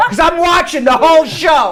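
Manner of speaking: high, loud mock Belgian accent.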